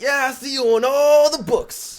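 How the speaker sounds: very high, shrill, booming, very loud put-on dude voice. Retelling what a guy said, impersonating the guy. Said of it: "Your impersonation of him".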